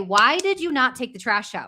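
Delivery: annoyed, angry, blaming, accusing tone. Showing how one line's delivery changes its subtext: angry accusing demand. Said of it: "pay attention to the way I'm saying it".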